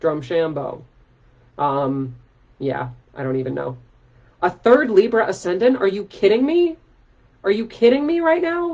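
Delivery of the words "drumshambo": said with American accent. Reading a place name from a chart: saying it like an american. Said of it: "I'm gonna say it like an American".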